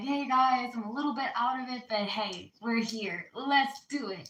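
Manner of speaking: put-on bright, upbeat, forced-cheerful voice, pushing through. Retelling how they greet viewers on a bad day: imitating own smiling upbeat greeting. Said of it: "I'm smiling and I'm like".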